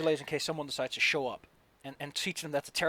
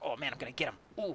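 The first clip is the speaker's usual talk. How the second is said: excited, thrilled, all worked up with glee; 7 dB quieter than usual. Voicing an enemy eager to attack the players: excited. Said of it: "he's feeling so excited about this".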